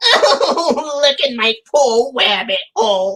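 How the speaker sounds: high, swooping, weepy cartoon voice, drawn out, sobbing. Picturing the rabbit losing his hole, the speaker does a crying Bugs Bunny voice. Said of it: "my impression of Bugs Bunny when he was crying about his rabbit hole".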